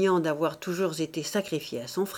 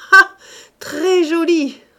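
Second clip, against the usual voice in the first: very high, loud, shrill, scornful mocking laugh; 10 semitones higher, 10 dB louder than usual. A daughter answers her mother's protest, laughing mockingly. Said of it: "Olympe éclata de rire".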